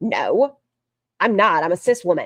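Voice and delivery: put-on upset voice. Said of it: "And she got very upset".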